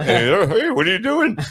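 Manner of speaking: high-pitched, pestering, repeated delivery. Retelling a phone call from a friend: Ralph Furley voice. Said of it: "he was like that".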